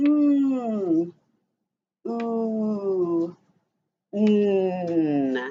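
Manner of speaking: slow, low, segmented "m-oo-m", long drawn-out mm. Speaker breaking a word into its sounds for listeners, each sound said slowly. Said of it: "say each sound slowly".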